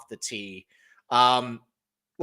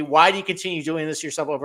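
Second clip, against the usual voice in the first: imitated screaming, higher; 3 semitones higher than usual. Retelling how the co-host screams at them over a pick: imitating co-host screaming. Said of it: "my co-host just scream at me".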